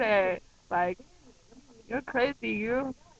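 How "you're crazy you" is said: soft, friendly teasing put-on Louisiana Cajun accent. Imitating how a man used to talk to her, in a Cajun accent. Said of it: "That's my Cajun accent".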